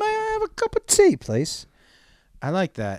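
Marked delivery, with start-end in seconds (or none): 0.0-1.7 put-on very high, sing-song, lilting English accent. Repeating the line in the accent compared to Oliver Twist, Oliver Twist English accent. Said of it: "your English accent sounded like that Orphan Oliver twist".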